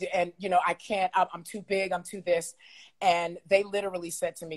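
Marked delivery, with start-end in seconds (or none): 0.6-2.5 teary, tearful, worried voice. Retelling coming into a label meeting: imitating own past teary voice. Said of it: "and I'm all teary".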